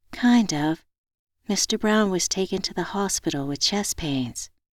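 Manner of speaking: sad, glum, downcast, let-down delivery. [name] answers Hendrick's phone call before heading to the hospital, sad. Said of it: "You sound sad".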